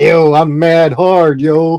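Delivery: mocking sarcastic tone. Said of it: "what I call a nice gesture is just like".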